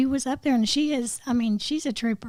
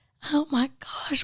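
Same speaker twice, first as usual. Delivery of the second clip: mock weepy, tearful cry of dismay; 3 dB quieter than usual. Retelling a call to a friend after the electricity was cut off: imitating own past crying. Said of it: "and I'm crying".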